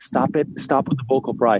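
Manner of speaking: ordinary talk, nothing marked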